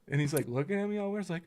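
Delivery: normal talking voice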